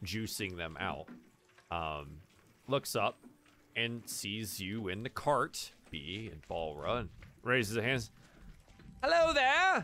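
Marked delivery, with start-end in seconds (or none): 9.0-9.8 joyful and cheerful, very high and loud. Voicing a grape-stomping man greeting travelers: joyful cheerful greeting. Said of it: "Kind of joyfully, cheerfully".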